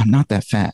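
muttered under the breath. Retelling an improvised movie line after being called fat: muttered under breath. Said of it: "And I go under my breath".

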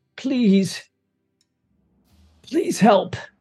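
high, very creaky, cracked, pained voice. A woman dragging herself along answers Roya's call for help; very creaky, pained voice. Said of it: "in a very, very creaky, pained voice".

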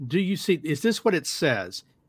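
ordinary delivery

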